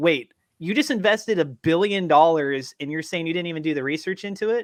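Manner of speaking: usual speaking voice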